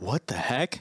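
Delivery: put-on muttering under breath. Retelling a moment of seeing the cops: imitating muttering under breath. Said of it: "under my breath".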